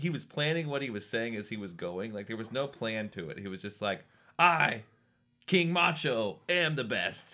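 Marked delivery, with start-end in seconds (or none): 4.4-7.3 high, very slow, halting, pauses between words. Retelling a man's unplanned boast on live TV, William Shatner-style delivery. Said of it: "William Shatner? Why are you talking like that?".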